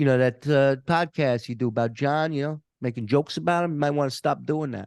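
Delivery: fast put-on mafia tough-guy voice. Speaker quotes a man who came to confront them, in a mafia voice. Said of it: "Did he really talk in that mafia voice?".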